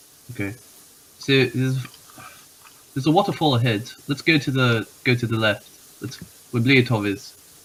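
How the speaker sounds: put-on, attempted British accent. Speaking in character, telling the party where to go: attempted British accent. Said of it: "The Australian became British".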